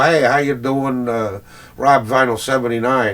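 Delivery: ordinary delivery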